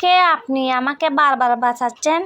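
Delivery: ordinary talk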